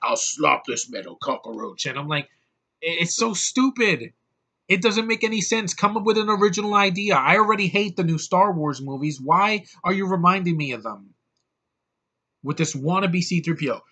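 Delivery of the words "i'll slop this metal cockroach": put-on low-pitched robot voice with a British accent. Retelling a movie scene, imitating Cogsman, British-accented robot. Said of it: "He's like".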